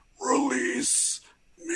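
very high, otherworldly alien creature voice. Doing an impression of the movie alien's iconic line: alien voice impression. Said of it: "another impression I have to do is, of course, my friend David the Alien".

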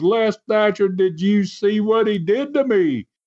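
high-pitched screaming voice. Retelling a wrestling video, a man screaming out after a pile drive: imitating someone screaming. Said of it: "Carson screamed out again".

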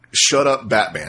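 put-on curt, snippy little scolding tone. Mimicking how the other speaker said a title: mock scolding tone. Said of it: "the way you said Batman Hush was like".

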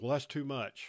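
ordinary delivery

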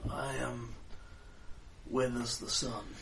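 put-on soft, hushed, very old voice. Voicing a character who introduces himself to the group, the speaker uses a very old voice. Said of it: "He says in a very old voice".

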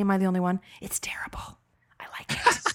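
embarrassed whisper. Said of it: "I'm whispering 'cause it's embarrassing".

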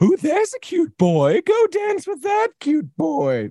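very high, sing-song, lovingly nosy voice. Voicing how she imagines the other person's mother sounded: imagined mom voice. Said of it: "I have your mom's voice pegged with something like this".

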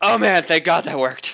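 relieved, in a character voice. Narrating a scene, then voicing Merlin after a spell works: voicing Merlin, relieved. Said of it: "I'm gonna put words in your mouth, Merlin. He says".

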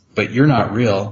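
ordinary delivery

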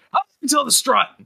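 loud shout pitched very high. Voicing a character who turns and calls to the crew: shouting in character. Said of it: "turns around and shouts".

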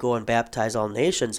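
ordinary talk

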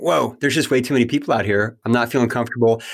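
ordinary delivery

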